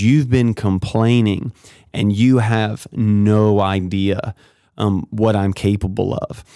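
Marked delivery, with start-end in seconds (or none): none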